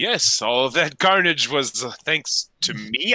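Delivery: very slow, halting and trailing off near the end. Answering a woman's question in a role-play scene, pausing toward the end. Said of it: "he kind of like pauses towards the end of his sentence".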